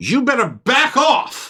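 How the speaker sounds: menacing, threatening voice.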